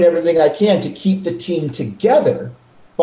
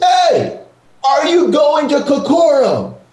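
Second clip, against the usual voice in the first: put-on, big, resounding, booming, pitched-up voice; 10 semitones higher than usual. Recounting a stranger calling out across a parking lot, in a booming voice. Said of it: "this booming voice".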